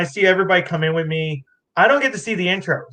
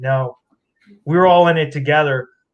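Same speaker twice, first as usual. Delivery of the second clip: plain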